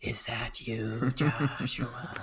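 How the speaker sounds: very slow, whispered giant-spider voice. Telling a made-up camping story, a voice from the webs: spider king voice. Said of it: "King of the spiders".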